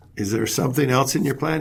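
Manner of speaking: normal talking voice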